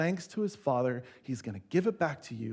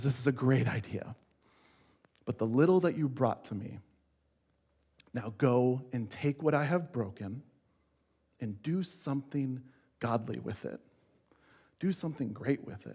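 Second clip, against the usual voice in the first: put-on gentle, compassionate voice. Speaker retells what he told Nathan about his idea: retelling compassionate words. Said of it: "I don't think he says it to me condescendingly".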